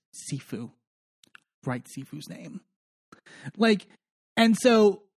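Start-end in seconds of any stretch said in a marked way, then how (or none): 0.2-2.7 very quiet whisper under the breath. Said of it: "she just whispers".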